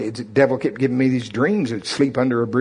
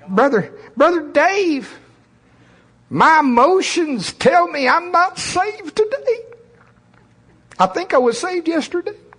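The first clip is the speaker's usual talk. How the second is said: very high, slow, nasal flesh-creature voice; 3 dB louder than usual. Speaker tries a voice borrowed from someone else: nasal flesh creature voice. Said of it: "I would use the voice of the nasalated flesh creature".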